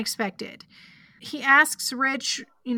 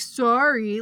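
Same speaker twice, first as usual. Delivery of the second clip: mocking bratty punk tone. Retelling how a kid answers each question: imitating a little punk. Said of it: "like a little punk".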